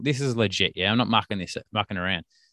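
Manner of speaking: ordinary delivery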